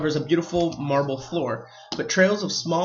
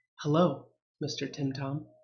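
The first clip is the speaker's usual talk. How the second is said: put-on hushed, soft boyish stage half-whisper; 8 dB quieter than usual. Narrating a game as the players step through the doorway, a half-whispering boy's voice. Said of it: "a boy's voice whispers from your right".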